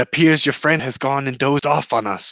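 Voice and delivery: hushed whispering. Voicing a character who whispers to a companion about a dozing friend, whispering. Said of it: "he whispers to Snorri".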